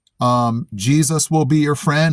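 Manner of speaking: plain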